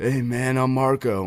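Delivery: laid-back, slow surfer-dude drawl. Retelling meeting a new guy for the first time, imitating Marco's surfer-dude voice. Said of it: "that's like his voice, like surfer dude type".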